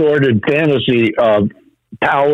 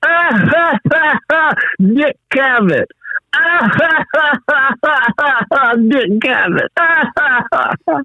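put-on very high, very slow, drawn-out stoned laughter; 12 semitones higher than usual. Retelling someone too high to talk, only laughing: imitating Sly laughing while high. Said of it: "all Sly is, can do is laugh".

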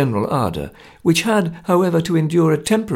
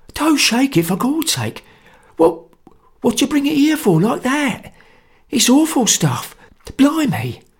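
hoarse whisper, much higher; 10 semitones higher than usual. A narrator reads an uneasy man warning another about a bottle, in a hoarse whisper. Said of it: "he whispered hoarsely".

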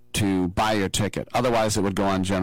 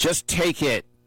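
firm, fairly stern, pitched-up delivery; 8 semitones higher than usual. Retelling paying a man who hands him a ticket, acting out speaking sternly. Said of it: "I said kind of sternly".

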